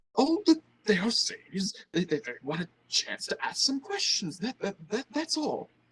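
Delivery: blubbering, stumbling over words, high stammer. Retelling what a fat, balding man says: blubbering voice. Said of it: "says in a, a blubbering voice".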